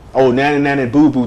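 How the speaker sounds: ordinary talk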